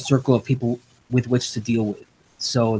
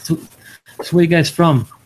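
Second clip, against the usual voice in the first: put-on thick Greek accent, old man voice, pitched up; 5 semitones higher, 3 dB louder than usual. Retelling what an old monk in the kitchen said, in his heavy Greek accent. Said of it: "He's a heavy Greek accent".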